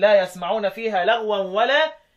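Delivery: plain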